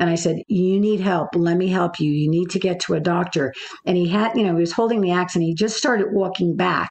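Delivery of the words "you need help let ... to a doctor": calm, even speech. Retelling words said to a hurt man holding an axe: retelling in a very calm tone. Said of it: "in a very calm tone".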